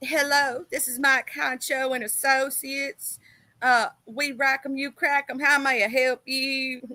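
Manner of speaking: voice as if on a phone.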